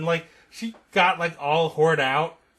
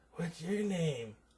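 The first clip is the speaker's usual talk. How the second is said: put-on little breathy voice, much quieter, slower; 13 dB quieter than usual. Speaker retells a woman practicing a voice and asking a name, her little breathy voice. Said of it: "her little breathy voice".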